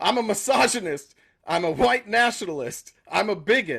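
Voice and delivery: hollered, yelled outburst. Retelling how the other speaker answered the riddle: retelling a yell. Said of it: "and then you yelled".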